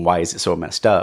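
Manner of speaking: ordinary talk, nothing marked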